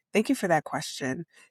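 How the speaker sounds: plain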